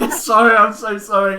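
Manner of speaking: very high, loud, giggly laughing. Apologizing to the group after cracking up: laughing while apologizing. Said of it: "were you laughing?".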